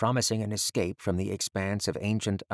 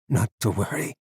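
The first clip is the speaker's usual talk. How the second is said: pained voice, strained with pain; 4 dB louder than usual. Reading a story aloud, an injured professor reassuring someone: pained voice. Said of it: "in a pained voice".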